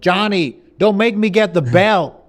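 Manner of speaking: put-on high, loud, yelling southern-accented shout. Retelling how a man pretends to shout at his kid, imitating a southern-accented shout. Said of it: "he shouts, supposed to be shouting at his kid".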